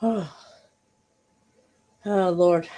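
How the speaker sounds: breathless, trying to breathe while speaking. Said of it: "I'm just trying to breathe".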